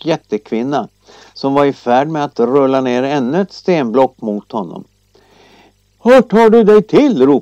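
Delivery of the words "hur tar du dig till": shouting, higher and louder. Narrating a farmer calling up to a giantess rolling boulders at him, shouting. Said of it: "ropade bonden".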